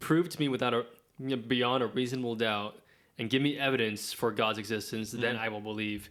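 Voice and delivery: ordinary talk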